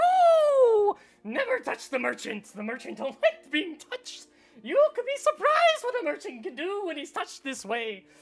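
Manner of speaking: startled shopkeeper voice. Voicing a merchant who is touched from behind: startled merchant voice. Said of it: "The merchant kinda jumps out of his shoes".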